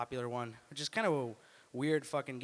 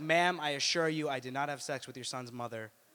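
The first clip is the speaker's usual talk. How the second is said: ordinary delivery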